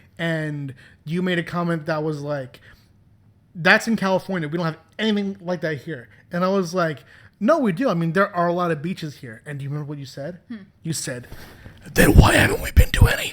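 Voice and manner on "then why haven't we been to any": loud, play-acted furious voice. Reminding the listener what they once said about local beaches, mock-furious. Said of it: "You sounded so furious".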